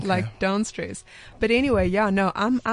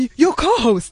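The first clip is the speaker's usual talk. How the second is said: dramatic tone, higher and louder; 5 semitones higher, 7 dB louder than usual. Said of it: "my mom's very dramatic".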